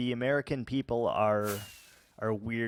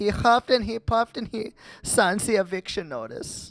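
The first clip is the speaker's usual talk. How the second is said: very high, shrill, loud German accent; 9 semitones higher, 6 dB louder than usual. Showing off impressions, doing the pig: German pig voice from Shrek. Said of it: "the German voice from uh, Shrek".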